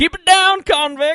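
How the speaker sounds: high, loud yelling. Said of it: "and so I just yell".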